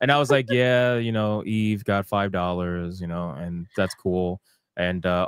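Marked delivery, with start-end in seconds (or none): 0.5-4.4 put-on super flat monotone. Streamer reenacting how he announced the waifu battle to chat, super monotone. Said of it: "doing the the rest of the waifu battle super monotone".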